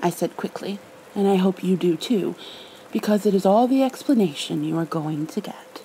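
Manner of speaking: plain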